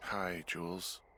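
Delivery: soft, weary, worn-out voice. Greeting the caller on the radio, tired. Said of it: "you sound tired".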